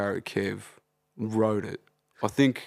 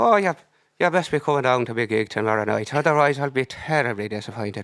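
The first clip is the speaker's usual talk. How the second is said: fake Irish accent, well dialed in; 3 semitones higher, 4 dB louder than usual. Speaker pretending to be some guy inviting someone to his gig, put-on Irish accent. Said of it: "You got the Irish one dialed".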